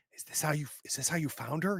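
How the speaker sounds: put-on half whisper. Retelling what a man asked after turning around, in a half whisper. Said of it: "He's like in a half whisper".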